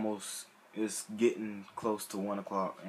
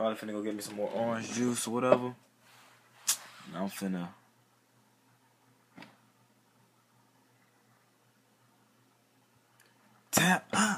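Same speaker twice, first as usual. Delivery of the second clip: sleepy, tired voice, louder; 4 dB louder than usual. Signing off before going to sleep, tired voice. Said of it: "I can hear it in my voice".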